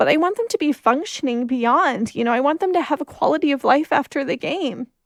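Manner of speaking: moved, getting emotional. Speaker talking about the players they want to be well, getting emotional. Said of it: "I'm getting emotional".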